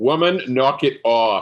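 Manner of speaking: booming, authoritative, commanding voice, pitched high. Emil uses an illusion to address a woman: booming, authoritative voice. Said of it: "use his minor illusion to give like a really booming, authoritative voice".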